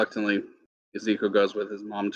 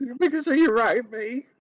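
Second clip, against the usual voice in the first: weepy, tearful voice, pitched very high. Voicing a mother saying goodbye to her son: crying mother voice. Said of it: "She just starts crying".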